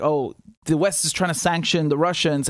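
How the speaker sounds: usual speaking voice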